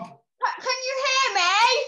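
very slow, high, stretched-out call. Asking on a video call if others can hear: shouting. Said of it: "There's no need to shout".

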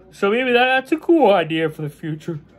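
yawning while talking. Wrapping up a video about a hat collection, yawning. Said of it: "Sorry, I'm yawning".

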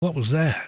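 sudden, startled, alarmed-sounding tone. Reading a letter where a friend in a dark car speaks: alarmed voice. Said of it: "in an alarming sounding voice".

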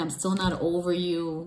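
plain

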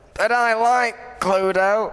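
put-on high, elderly old lady voice. In an improvised scene about board games, speaking in an old lady voice. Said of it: "Do you got old lady voice?".

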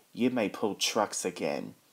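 ordinary delivery

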